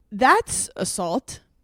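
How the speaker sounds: ordinary talk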